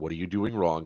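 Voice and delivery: imitated whisper. Retelling how someone whispered in the speaker's ear: imitating a whisper. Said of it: "I swear he whispered in my ear".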